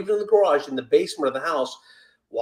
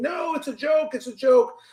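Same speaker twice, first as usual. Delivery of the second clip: mock screaming, high-pitched, loud; 10 semitones higher than usual. Retelling a rubber snake prank gone wrong: imitating Andrea screaming. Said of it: "And she's screaming".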